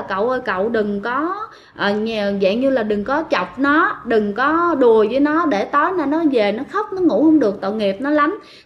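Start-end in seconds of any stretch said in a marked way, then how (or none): none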